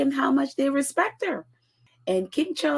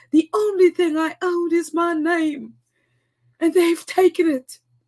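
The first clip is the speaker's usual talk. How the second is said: put-on raised, louder voice with British accent; 4 semitones higher, 5 dB louder than usual. Quoting a fuming Queen's words about losing her name: British accent quoting the Queen. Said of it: "but in a British accent".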